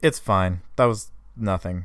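unconvincing delivery. Asked if everything is okay after a phone call, she answers unconvincingly. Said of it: "she said very unconvincingly".

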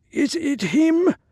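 very high, hoarse voice. Narrator reads the old man asking the group a question: hoarse question. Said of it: "The old man asked hoarsely".

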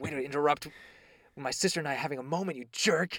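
put-on, put-out, sore, upset grumble. Retelling a character's thoughts when someone interrupts: upset Yuri impression. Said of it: "and then Yuri gets upset, and in his mind, he's like".

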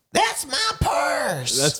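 very high, squeaky, swooping, totally exasperated. Asked by a friend to do the line, giving an exasperated Bobby Hill impression. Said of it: "Say that's my purse. Can you do it?".

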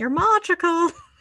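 bad put-on Irish accent, high and loud. Up late and getting weird, saying something in a put-on Irish accent. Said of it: "It's an Irish accent".

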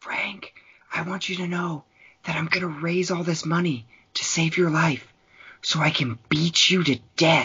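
put-on whisper. Retelling a movie scene, a line said through a door: imitating Rod whispering. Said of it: "whispering through the door".

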